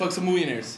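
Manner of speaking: rushed, fast, words blurred together. Repeating a phrase the way it was first said: said fast, run together. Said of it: "Because I said it fast".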